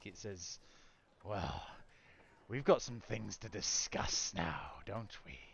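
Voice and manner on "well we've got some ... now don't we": snarling, growled half-dragon creature voice. A game master voicing a half-dragon confronting the players, snarling half-dragon voice. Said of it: "snarls at you and brings out a claw".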